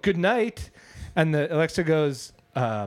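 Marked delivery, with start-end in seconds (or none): 0.0-0.7 put-on, loud, raised voice, pitched up. Retelling finally saying good night loud enough: imitating own loud good night. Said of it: "I say it loud enough".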